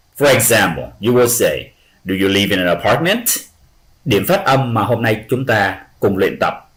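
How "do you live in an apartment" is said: rising pitch at the end on apartment. Pronunciation lesson example of a yes-no question, rising at the end. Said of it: "they will raise their voice up at the end of a yes-no questions".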